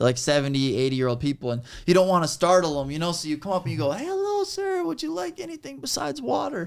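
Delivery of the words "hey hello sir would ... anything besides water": very high, polite, disarming waiter voice. A waiter greeting an elderly customer, in a high-pitched voice. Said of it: "you get this like high pitched voice".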